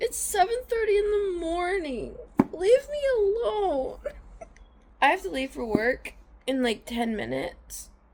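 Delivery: very high, weepy voice crying through tears. Speaker moved by a book just before leaving for work, crying. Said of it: "Why am I crying?".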